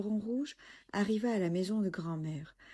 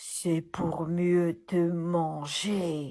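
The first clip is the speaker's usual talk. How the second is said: very slow, loud growling wolf voice; 6 dB louder than usual. Reading a tale aloud, voicing the wolf's reply to the girl: growling. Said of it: "grogna le loup".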